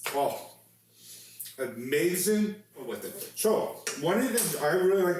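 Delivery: speaking mid-chew, talking through a full mouth. Tasting the beef shank just cooked, talking with mouth full. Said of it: "I'm talking with my mouth full".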